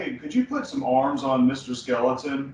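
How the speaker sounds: ordinary delivery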